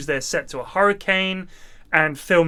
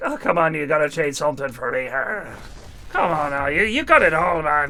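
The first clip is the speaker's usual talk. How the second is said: bad, weird, put-on Irish accent; 2 semitones lower than usual. Imitating a man pushing the speaker to trade, in a weird fake Irish accent. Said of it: "this really weird fake Irish accent".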